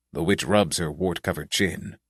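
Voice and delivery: plain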